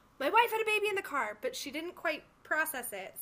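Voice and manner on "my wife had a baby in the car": put-on, high-pitched yelling. Retelling what a husband said to a valet woman: imitating husband yelling. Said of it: "he's yelling at her".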